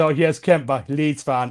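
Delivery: put-on smug, gloating voice. Retelling how a friend gloated after the result: imitating Nick, smug. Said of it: "he was very smug about the whole result".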